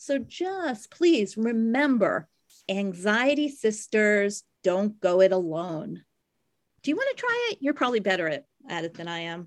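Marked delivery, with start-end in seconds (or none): 0.0-6.0 ringing out proudly, loud and very drawn out. A co-host, asked to say the closing line alone, rings it out in a proud, loud voice. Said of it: "Ring it out in your proud, loud voice".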